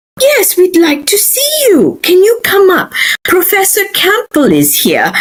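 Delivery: exaggerated British accent. Retelling being asked about an application, in Miss Spurway's British accent. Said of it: "I'm using my best British accent here because she did".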